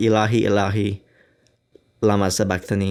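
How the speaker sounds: plain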